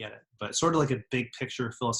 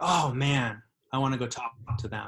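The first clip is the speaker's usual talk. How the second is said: ordinary talk, nothing marked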